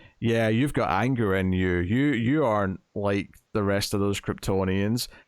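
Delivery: ordinary delivery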